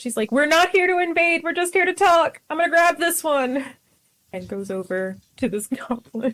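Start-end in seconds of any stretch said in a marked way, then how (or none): 0.3-3.6 shrill, high-pitched, carrying yell. A player's character calls to her friend at the door, yelling to a friend. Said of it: "she's gonna yell to her friend at the door".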